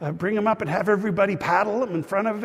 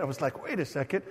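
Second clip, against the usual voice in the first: plain reading voice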